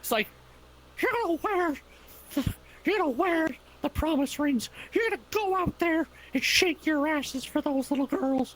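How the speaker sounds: squeaky voice, pitched way up high. Showing off impressions in a conversation, South Park Mickey Mouse voice. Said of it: "You do got South Park Mickey Mouse".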